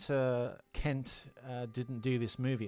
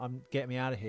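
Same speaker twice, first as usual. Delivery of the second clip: plain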